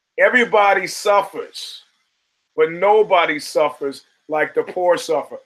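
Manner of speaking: ordinary delivery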